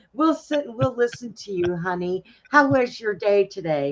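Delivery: mock AI chatbot partner voice. Mocking apps where you can date an AI: imitating an AI chatbot partner. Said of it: "you can date a A I girl or date a A I guy".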